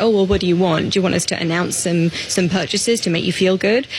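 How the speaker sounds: ordinary delivery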